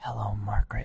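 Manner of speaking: gentle, low, soft voice. Reading a story aloud, voicing a character's greeting, in a gentle voice. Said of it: "Clementine said with a gentle voice".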